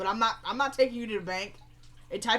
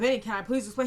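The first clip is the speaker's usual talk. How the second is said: ordinary talk, nothing marked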